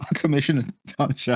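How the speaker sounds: high words broken up by laughter. Saying a hard word for another speaker to repeat: laughing while talking. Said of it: "Sorry for laughing".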